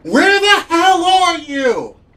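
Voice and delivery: shrill, very high, very loud scream. Game master voicing a woman alone in the desert, screaming into the empty desert. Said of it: "starts screaming into the empty void".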